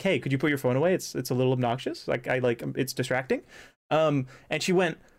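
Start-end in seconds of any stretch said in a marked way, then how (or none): none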